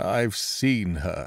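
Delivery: hollow, empty-sounding tone. Reading a story aloud, voicing a character's line: hollow voice. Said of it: "he said in a hollow voice".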